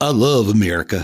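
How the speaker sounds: attempted Los Angeles accent. Mimicking a man from Los Angeles who loves America, attempted Los Angeles accent. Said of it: "I'll try the Los Angeles accent".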